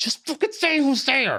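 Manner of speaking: acted-out, very high, shrill screaming. Retelling his on-stage proposal bit, re-enacting screaming at her. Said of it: "I'm fucking screaming at her on stage".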